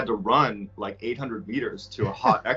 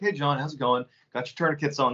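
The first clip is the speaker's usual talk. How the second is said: mock perfectly calm, steady, even voice; 4 semitones higher than usual. Retelling a medic's words in the middle of a gunfight: imitating someone calm. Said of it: "And he's so calm".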